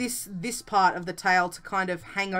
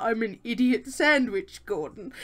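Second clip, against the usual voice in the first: put-on solemn, sincere, dead-serious, earnest delivery; 2 semitones higher than usual. Retelling a funny quote someone said in reply: imitating a very serious reply. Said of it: "she said it so seriously too".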